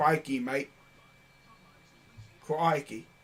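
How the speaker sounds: put-on Australian accent. Joking to an Aussie friend about a layup: mock Australian accent. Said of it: "my Aussie friend".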